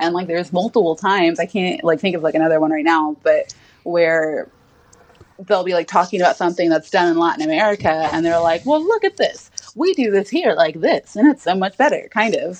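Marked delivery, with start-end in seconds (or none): 8.6-12.1 old-time put-on transatlantic narrator voice. Speaker describing a film mimics its narrator in a transatlantic accent. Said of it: "Your transatlantic accent's not bad at all".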